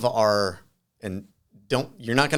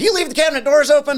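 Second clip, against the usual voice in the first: very high-pitched, loud put-on rural Southern US accent; 9 dB louder than usual. Retelling what a man asked during their conversation, imitating a redneck accent. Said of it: "so it kind of talks like a redneck".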